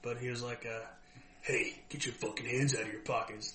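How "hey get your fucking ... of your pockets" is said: put-on hoarse, rasping grandfather voice. Acting out your grandfather walking up to people at the px, imitating a grandfather's raspy voice. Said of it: "my grandfather's a raspy voice".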